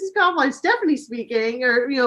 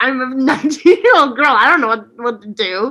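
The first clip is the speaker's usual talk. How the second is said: mock voice of sheer panic; 3 dB louder than usual. Retelling a moment of panic when a phone rang: imitating own panicked voice. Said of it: "and I'm panicking".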